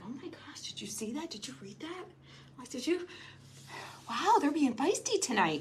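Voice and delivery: hushed whisper, very quiet and soft. Retelling what was said to him during a show: retelling a whisper. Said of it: "whispering to him".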